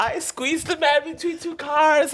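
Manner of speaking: panicked voice, very high-pitched and slow.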